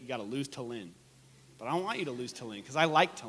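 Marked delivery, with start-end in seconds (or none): 0.0-0.9 fast, lower and quieter. Speaker to an audience taking notes, showing the phrase said real fast. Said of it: "If I say it real fast".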